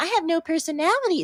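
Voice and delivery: high, fast, gushing fangirl voice, no personality.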